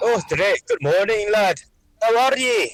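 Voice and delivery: terrible put-on Scottish accent. Greeting another speaker in the morning: terrible Scottish accent. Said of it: "using these terrible Scottish accents".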